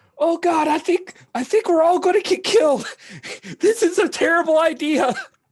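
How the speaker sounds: very high, loud, frantic panicked yelling. Voicing a pilot on a ship about to take off: panicked yelling. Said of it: "you hear a guy yelling".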